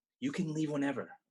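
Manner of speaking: hushed whisper. Acting a scene, saying a line not meant to be heard: whispering. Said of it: "I'm whispering it".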